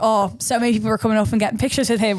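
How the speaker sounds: ordinary talk, nothing marked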